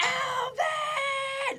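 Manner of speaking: very high yell, voice cracking and breaking apart. Getting into character as a single father of chipmunks, Dave yelling, voice cracking. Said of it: "My voice cracked".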